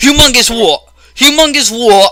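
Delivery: high, loud, mock outraged shout. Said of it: "And then she's like".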